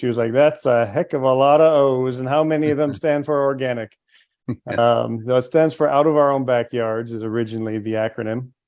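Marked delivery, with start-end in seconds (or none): 0.3-4.0 put-on South American accent. Recounting what a woman at a food show asked, in a South American accent. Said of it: "she said in a South American accent".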